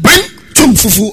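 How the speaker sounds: belted out high and loud.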